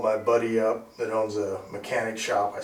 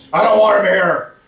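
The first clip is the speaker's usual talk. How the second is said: sudden, full-blast, very loud, high shout; 11 semitones higher, 14 dB louder than usual. Retelling a guy's voice heard in the house: imitating a loud shout. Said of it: "That loud".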